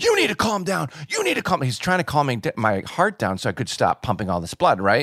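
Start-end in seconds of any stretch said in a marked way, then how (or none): 0.0-1.7 put-on very high, swooping screaming. Retelling a man screaming at the speaker as they choked on blood, imitating the scream. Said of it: "He's like screaming at me".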